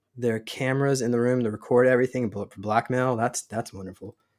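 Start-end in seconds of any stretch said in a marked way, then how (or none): 3.2-4.1 sarcastic tone, quieter. Reacting to cameras recording everything for blackmail: sarcastic. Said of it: "I'm being sarcastic".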